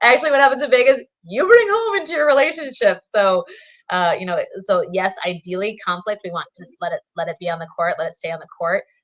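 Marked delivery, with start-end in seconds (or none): 0.0-3.0 high, loud scoffing. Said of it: "I'm like".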